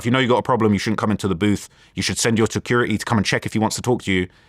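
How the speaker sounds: usual speaking voice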